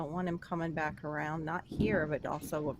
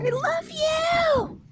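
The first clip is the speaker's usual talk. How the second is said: playful fake shout, higher and louder; 11 dB louder than usual. Explaining what a heart emoji means by acting it out: mock yelling. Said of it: "Why are you yelling at me?".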